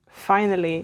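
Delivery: finally said with a falling tune.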